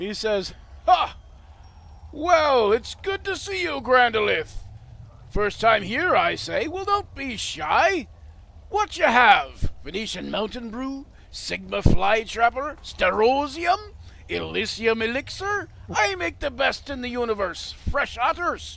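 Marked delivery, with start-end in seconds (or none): 0.9-18.8 booming barkeeper voice at full volume, pitched up. The narrator voices the tavern barkeeper greeting Grandolith: booming Santa Claus barkeeper voice. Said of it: "and a big booming laugh".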